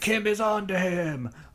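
high, cheesy monster-villain voice. Recapping an episode scene, the speaker quotes Goldar in a really bad Goldar impression. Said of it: "That's my really bad Goldar impression".

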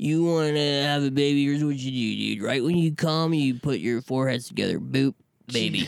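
wasted, spaced-out, cracked-out party guy voice. Retelling advice from a guy at roadie parties: imitating a cracked-out guy. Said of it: "some guy who's all, like, cracked out".

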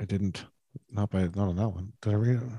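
muttering under breath. Searching through an old list while talking: mumbling to oneself. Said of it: "I'm just mumbling to myself here".

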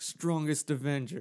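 loud, carefully enunciated, each word clear. Retelling a movie scene where Thor tries to access a ship: enunciating like Thor. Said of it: "he was, like, enunciating".

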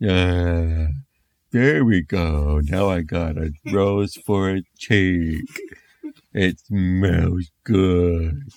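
very slow, dragged-out zombie drawl. Reading a zombie story aloud, the daddy zombie speaks: daddy zombie voice. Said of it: "And the daddy zombie said, / Flesh literally dripped off of their faces. They had teeth sticking out and bugged out of their heads, hair falling out, and bones that kind of stuck out here and there, b".

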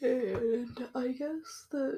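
slow words stretched through a yawn. Recording at night while tired, yawning. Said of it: "sorry, I was yawning, that sounded weird".

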